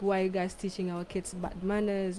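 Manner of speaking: normal talking voice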